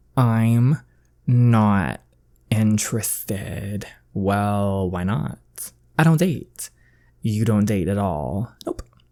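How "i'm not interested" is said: slow, deliberate, drawn-out, spelled-out words. Turning down a date a second time: said slower. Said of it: "I'll say it slower for you".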